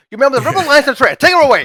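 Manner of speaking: put-on very loud, very high-pitched northern English accent. Correcting another's impression of an actor's Darth Vader line: David Prowse northern accent. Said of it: "he's a northerner. He's like".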